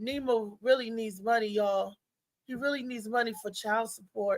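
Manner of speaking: quiet, gentle voice. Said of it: "He said it like [name] in The Arms of an Angel".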